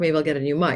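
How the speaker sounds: ordinary talk, nothing marked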